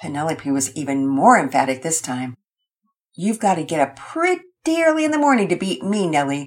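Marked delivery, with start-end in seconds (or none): 3.1-6.5 light, playful, ribbing, teasing tone. [name], out of cards first in the game, speaks to Nellie, playfully teasing. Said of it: "[name] teased playfully".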